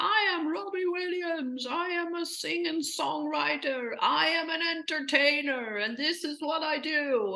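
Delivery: loud shout. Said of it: "he is shouting to be seen".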